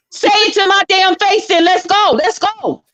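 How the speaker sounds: very high, taunting, fired-up, confrontational. Staging a fake argument to provoke another speaker: mock confrontation. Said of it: "let me make you mad".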